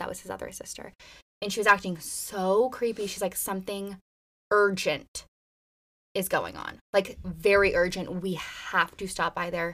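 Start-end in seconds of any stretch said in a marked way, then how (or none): none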